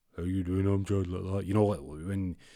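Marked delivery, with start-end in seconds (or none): 0.2-1.1 electronically deepened, app-altered, disguised deep voice. Retelling an edited recording where a voice was changed, McNulty's disguised deep voice. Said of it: "make their voice all like deep".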